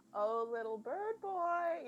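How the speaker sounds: condescending drawl, high-pitched and very slow. Retelling a scene where she pretends to look for him, mock-condescending voice. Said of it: "in the most condescending voice she can muster".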